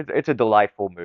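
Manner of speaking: usual speaking voice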